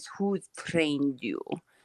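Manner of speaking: put-on soft, thick Russian accent. Recounting meeting Samir Osmanagich, repeating his question: Samir Osmanagich thick Russian accent. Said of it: "like thick, like Russian accent, he says".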